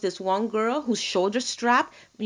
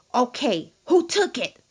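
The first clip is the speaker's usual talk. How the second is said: mock severe, stern, demanding outcry; 3 semitones higher than usual. Retelling a girl who lost her shoe in the dressing room; retelling a stern outcry. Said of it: "she cried out in a really stern voice".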